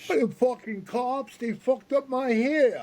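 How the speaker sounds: put-on strong New York accent. Retelling how a man ignored his handshake, the speaker quotes him in a strong new york accent. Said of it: "he had that real strong New York accent".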